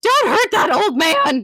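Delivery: high, loud pleading shout.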